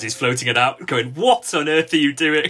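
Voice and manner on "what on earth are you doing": restrained, reined-in yell full of disbelief. Recalling screaming at a player floating a pass, retelling a scream. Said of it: "I'm screaming at him".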